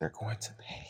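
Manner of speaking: very quiet whisper under the breath. Retelling a scene, one character speaks from the door to another: whisper. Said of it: "he whispers".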